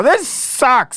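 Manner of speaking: play-acted very high-pitched, frustrated, exasperated complaining. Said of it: "just go".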